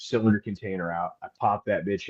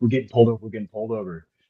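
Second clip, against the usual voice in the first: ordinary talk, nothing marked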